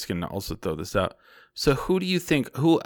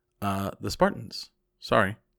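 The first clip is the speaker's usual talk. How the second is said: stoic, impassive, unmoved game-show host reading. Describing a game show host's manner, in a stoic Alex Trebek impression. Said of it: "he was so stoic".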